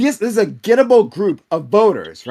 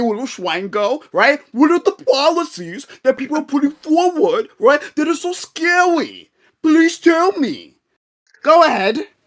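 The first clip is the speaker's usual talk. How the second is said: put-on high-pitched, condescending, patronising baby talk; 6 semitones higher than usual. Debater to an opponent who couldn't answer, in condescending baby talk. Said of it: "since we're going to be condescending like a baby".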